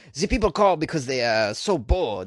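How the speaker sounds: fake, put-on French accent on English. Reading out a spokesman's quote, in a put-on french accent. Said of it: "Is that a pretty good French accent?".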